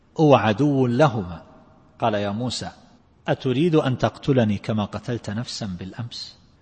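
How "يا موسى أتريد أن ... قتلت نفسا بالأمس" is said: ordinary talk, nothing marked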